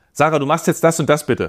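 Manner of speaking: pushy, insistent, forceful, pressing delivery. Contrasting two ways of asking sarah to do something, in a forceful, pressing tone. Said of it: "Das zweite war sehr druckvoll".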